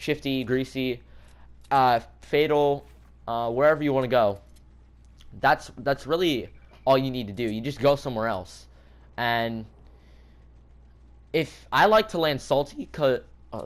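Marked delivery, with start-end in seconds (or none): 9.2-13.7 voice breaking, cracking mid-word. Speaker explaining a choice to listeners, voice cracking. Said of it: "sorry for the voice crack".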